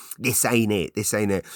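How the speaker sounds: complaining, insistent nagging voice, on repeat. Retelling a visit, the speaker quotes Pam again, imitating Pam's nagging voice. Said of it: "like a nagging voice".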